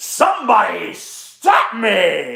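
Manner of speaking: swooping pitch with long drawn-out "me". Doing a requested terrible impression: Jim Carrey impression. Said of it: "Jim Carrey".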